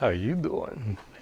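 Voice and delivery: very soft, near-whisper voice. Greeting someone named Susie in best Matt LeBlanc voice. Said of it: "In my best Matt LeBlanc voice".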